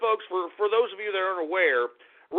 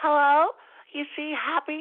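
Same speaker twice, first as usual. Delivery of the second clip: put-on girly feminine voice, high, slow, drawn out; 8 semitones higher than usual. Showing someone how to sound like a chick, put-on feminine voice. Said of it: "sound like a chick. Sound like".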